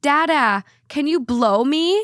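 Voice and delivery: put-on big loud yell in a tiny toddler voice. A father retells his toddler son shouting to him in the main aisle, retelling a toddler's big yell. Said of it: "in his biggest toddler yell, shouts".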